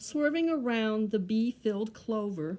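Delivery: ordinary delivery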